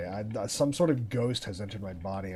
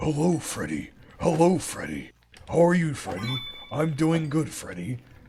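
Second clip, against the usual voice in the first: put-on animatronic bear voice, pitched higher; 5 semitones higher, 3 dB louder than usual. Bantering with the group about the glam rock ghost, Freddy Fazbear voice. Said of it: "The ghost of Freddy Fazbear".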